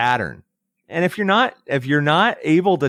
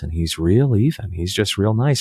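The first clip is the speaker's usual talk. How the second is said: put-on even, level voice, pitched much lower; 6 semitones lower than usual. Describing a mild-mannered accountant who cut off his anger, imitating Billy's even talk. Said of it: "he talks like this".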